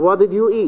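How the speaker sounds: high fall on eat, high to low. Teaching polite, friendly question intonation: high fall on eat. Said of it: "the last one, it is three, one".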